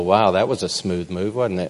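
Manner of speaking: usual speaking voice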